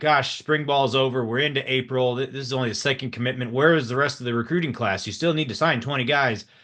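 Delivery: normal talking voice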